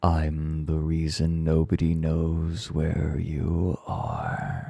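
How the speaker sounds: low whispered voice. Narrating the story, the horse speaks to the one hidden inside it: baritone whisper. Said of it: "Whispers the horse in his baritone voice".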